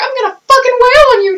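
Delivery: very high, furious cartoon squeak. Speaker imagines how a pissed-off Mickey would talk, pissed-off Mickey Mouse impression. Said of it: "Mickey's just like".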